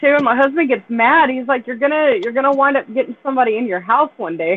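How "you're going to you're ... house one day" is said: usual speaking voice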